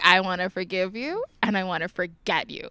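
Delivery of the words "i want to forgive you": usual speaking voice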